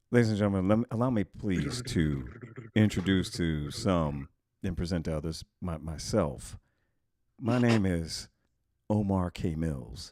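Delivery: silky, velvet-smooth put-on delivery. Introducing himself by name to ladies and gentlemen: smooth velvety voice. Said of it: "the reason that I'm saying it like this is because everything just sounds better ... With velvet".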